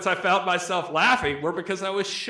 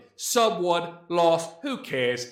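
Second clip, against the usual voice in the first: high-pitched put-on British accent. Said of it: "so I'm gonna read it in a British accent".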